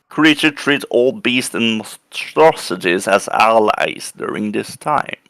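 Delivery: ordinary delivery, nothing marked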